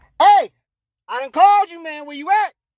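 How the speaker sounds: high-pitched, loud calling out.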